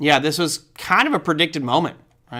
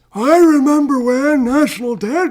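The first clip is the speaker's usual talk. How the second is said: put-on slow, very high-pitched, cranky, grumpy old man voice; 10 semitones higher, 5 dB louder than usual. Joking about a friend showing their age, in a grumpy old man voice. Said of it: "you got to say with an old man voice".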